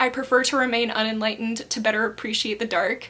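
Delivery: plain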